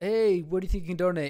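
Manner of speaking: speaking up loudly. Retelling a donation phone call, imitating MrBeast on a call. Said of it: "he's like".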